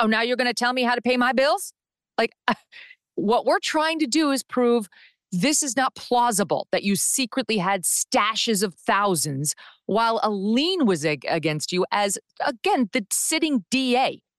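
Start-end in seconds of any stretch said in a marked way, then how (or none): 0.0-1.7 fast, bristling, defensive tone. Recounting how the sitting DA got defensive when asked, mocking her defensive tone. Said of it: "she once again got all defensive".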